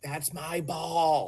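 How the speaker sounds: play-acted, high, abrupt, sudden yell. Retelling a woman who grabbed the speaker's arm claiming a ball, imitating someone yelling. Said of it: "she just yelled in my ear".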